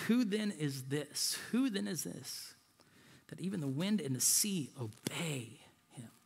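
low, soft, hushed murmur full of awe.

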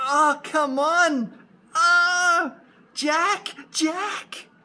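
really emotional, very high, very slow voice. Showing how Jack's mum should sound, a really emotional mother voice. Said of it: "You need to make her really emotional".

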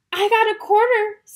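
cheerful and pleased. A kid compares trick-or-treat haul with the other kids, happy. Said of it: "says Violet happily".

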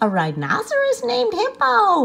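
very high, swooping exclamation through laughter. Fluffy, howling with laughter at the rhinoceros's name, cries out laughing. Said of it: "Fluffy cried".

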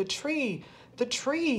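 shrill, drawn-out hollering screech. Narrator voicing the brother jumping out of his seat, screeching and hollering. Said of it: "he screeched".

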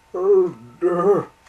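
very loud, high-pitched groan. A steam engine with a pain in his boiler speaks, groaning. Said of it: "groaned Wee Georgie".

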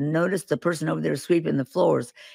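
ordinary talk

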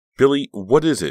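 insistent, demanding tone. Narrator reads Danielle demanding an answer from nervous Billy. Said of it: "She demanded".

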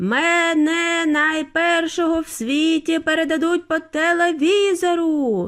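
shouted while running, Мене stretched out. A boy racing toward a huge TV camera, shouting while running. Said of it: "кричав він на бігу".

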